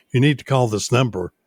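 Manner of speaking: ordinary talk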